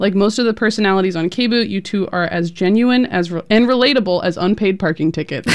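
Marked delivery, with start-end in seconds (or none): none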